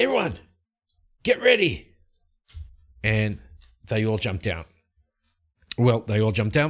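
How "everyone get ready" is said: very high, shrill scream. Voicing Light calling everyone to get ready as wolves charge: Light screaming. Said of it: "Light just screams out".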